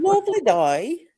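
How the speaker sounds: fake, clumsy British accent. Speaker admits they can't do accents, then tries one anyway: bad british accent. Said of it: "If I could do the Australian accent or the British".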